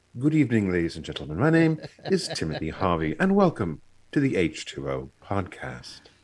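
put-on British accent. A podcast host redoes his self-introduction, in an NPR slash British accent. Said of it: "That's my little NPR slash British accent".

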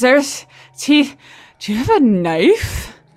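panting and out of breath. Voicing a character who ran out of the woods, panting in character.

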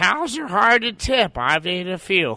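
very high, slow, drawn-out put-on voice. Answering a request to do a Dan Bublitz impression. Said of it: "your impression of Dan Bublitz?".

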